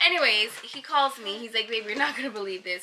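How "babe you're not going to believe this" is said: voice caught between laughing and crying. Retelling a boyfriend's phone call: imitating someone half laughing, half crying. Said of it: "in between laughing and, like, crying".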